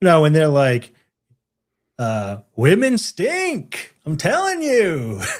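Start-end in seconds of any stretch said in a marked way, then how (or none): 2.6-5.2 mock over-the-top pompous, sarcastic drawl, swooping high. Discussing voice acting, mimicking how they say it: mock-pompous, sarcastic voice. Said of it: "super exaggerated, uh, like pompous, sarcastic voice".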